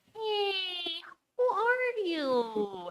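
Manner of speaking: voice jumps very high, hushed, long drawn "you". Retelling how someone at Evergreen greets the speaker, voice jumping way up high. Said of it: "their voice goes up by like three octaves".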